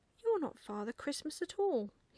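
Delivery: peeved, cross, high-pitched voice. Reading a story aloud, the narrator voices a character answering the young lady, cross. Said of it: "he said crossly".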